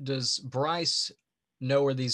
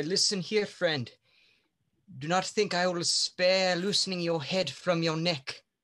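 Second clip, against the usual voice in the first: acted menacing, intimidating tone, pitched up; 5 semitones higher than usual. Playing a character with a sword at an outlaw's neck: intimidating threat in character. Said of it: "Intimidate roll".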